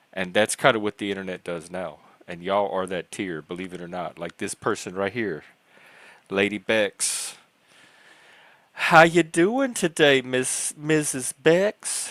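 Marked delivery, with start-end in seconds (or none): 8.7-12.1 bad Southern drawl, very high, very slow, drawn out. Speaker greets a person they point out: failed Southern accent. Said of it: "I can't even do my own Southern accent".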